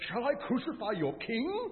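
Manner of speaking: sarcastic fake surprise, very high, swooping pitch. Retelling the scene as Pilate taunts the crowd: Pilate feigning shocked surprise. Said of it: "He feigns surprise, pretends to be shocked".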